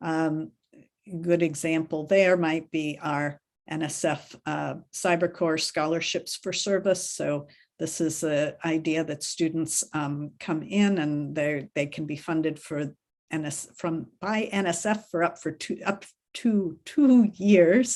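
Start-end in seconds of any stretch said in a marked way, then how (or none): 15.9-18.0 slow, higher and louder. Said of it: "I'll say that slowly".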